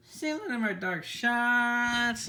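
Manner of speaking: very slow, loud, high voice, breaking. Signing off his Transformers video to viewers, voice cracking. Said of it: "My voice just fucking cracked".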